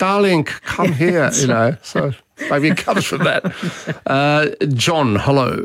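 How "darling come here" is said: high, slow Eastern European accent. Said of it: "if you're doing an Eastern European accent".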